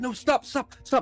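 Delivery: put-on fumbling, flustered character voice. Voicing a guard who fumbles and drops the bread as the door closes: voicing a fumbling guard. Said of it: "he's like".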